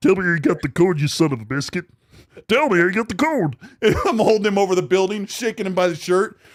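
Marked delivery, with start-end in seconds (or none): 0.0-3.6 threatening vigilante tone. Acting out interrogating a man hung upside down off a building: Batman voice. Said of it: "Did you do the Batman?".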